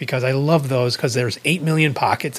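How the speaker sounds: ordinary delivery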